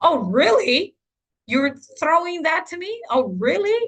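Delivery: angry, disbelieving tone with pitch climbing. Explaining tone, demonstrating a parent whose kid throws something at breakfast, angry tone. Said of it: "word with an angry tone".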